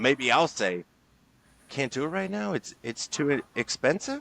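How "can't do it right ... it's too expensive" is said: upward lilt at the end on expensive. Demonstrating mirroring by repeating someone's words back: upward inflection at the end. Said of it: "tonality, upwards inflection".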